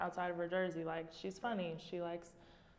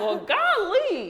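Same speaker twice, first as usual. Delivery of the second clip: put-on shrill, loud Southern accent, golly stretched out; 13 semitones higher, 16 dB louder than usual. Imitating a teammate from Alabama: imitating Sarah's Southern accent. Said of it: "She'd be like".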